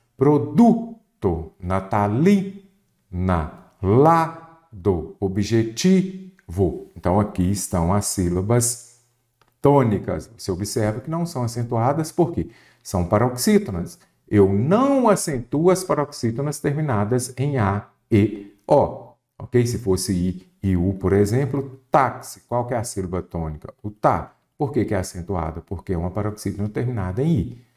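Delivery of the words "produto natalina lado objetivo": slow speech, each word's stressed syllable leaned on. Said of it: "Então vamos marcar aqui".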